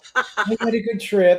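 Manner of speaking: coy, pitched high and drawn out. Retelling how she shows up a week later: imitating someone acting coy. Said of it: "she's acting all coy and everything".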